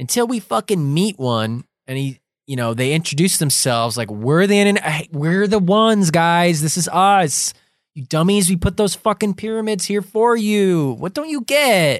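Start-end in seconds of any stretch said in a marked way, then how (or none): 4.1-12.0 mock antagonistic, high, condescending alien voice. Imagining aliens introducing themselves to humans: put-on antagonistic alien. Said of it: "antagonistic like that".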